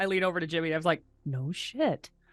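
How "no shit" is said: very quietly, much quieter. Leaning over to Jimmy in class, very quiet. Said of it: "Just very quietly".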